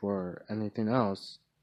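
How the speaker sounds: ordinary delivery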